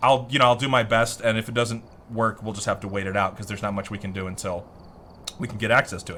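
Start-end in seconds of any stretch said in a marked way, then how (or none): none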